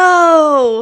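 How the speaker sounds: "no" said high-pitched and loud.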